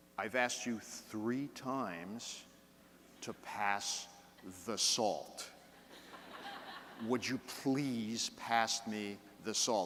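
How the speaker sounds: slow, stern, measured anger, every word spaced out. A father recalls how he spoke to his kids when angry, retelling angry, slow speech. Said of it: "I would speak slowly".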